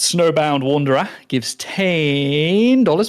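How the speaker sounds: hint of Australian accent. Reading out a viewer donation on stream, going a bit Australian. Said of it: "I went a bit Australian there".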